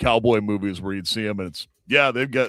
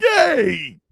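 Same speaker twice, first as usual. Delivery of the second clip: very high, loud, stretched cheer of delight; 5 dB louder than usual. Imitating an excited friend's reaction: imitating excited cheer. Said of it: "Garth is excited. He's like".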